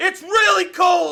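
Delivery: shouting loudly. Voicing a character who fell down a well, calling up loudly. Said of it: "he will then cry up".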